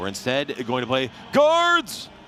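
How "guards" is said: very high, loud shouted yell. Announcing a game whose title has an exclamation mark: yelled 'Guards!'. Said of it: "you have to say it like that. It has an exclamation mark in the text. You have to yell it".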